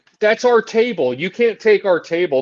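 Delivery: loud, full-force yelling at maximum volume. Retelling what two wrestlers shout at ringside: imitating people yelling. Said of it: "yelling so loud right now".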